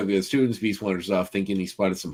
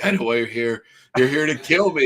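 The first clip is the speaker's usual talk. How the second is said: mock suspicious, high, paranoid stoner voice; 5 semitones higher than usual. Retelling a movie scene, imitating a paranoid man at the door. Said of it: "dude that's all paranoid and weed".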